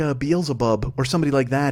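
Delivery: ordinary delivery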